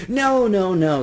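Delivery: high, loud, protesting cry. A little man refuses a woman's offer of taxi fare, crying out. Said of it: "he cried".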